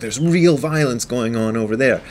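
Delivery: defensive, protesting tone.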